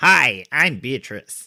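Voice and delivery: comic puppet-style voice with American accent. Restarting an introduction, the speaker greets the listener in an American Muppet-like voice. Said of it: "Is Beatrice an American and like a member of the Muppets".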